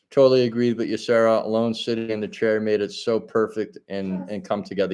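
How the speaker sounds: ordinary talk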